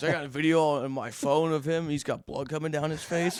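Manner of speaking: ordinary delivery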